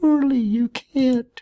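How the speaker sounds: put-on teeniest possible tiny, high-pitched little voice. Narrator reads Mouse speaking into a closet corner, in the tiniest possible voice. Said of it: "in the tiniest possible voice".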